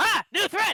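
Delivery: very high, loud, startled alarmed yelp. Voicing Zephyr, who turns around: acted alarmed cry. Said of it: "Zephyr turns around, is like".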